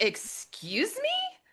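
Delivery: hushed, prim, prissy breathy whisper. Retelling a reply to a father asking for a fee: imitating own prissy reaction. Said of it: "And I'm very prissy".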